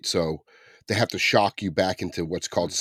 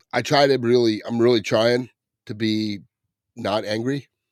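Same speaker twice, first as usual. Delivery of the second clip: normal talking voice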